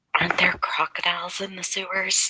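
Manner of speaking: high-pitched, hushed whisper. Playing a character who whispers a question to a companion: whispering in character. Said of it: "Eva's whispering to Lucas".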